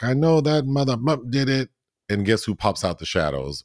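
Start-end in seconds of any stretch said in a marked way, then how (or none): 0.0-1.7 mock high-pitched screaming outburst. Retelling a garage scene where the tire was slashed: imitating Attorney Varney screaming. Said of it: "he starts screaming like".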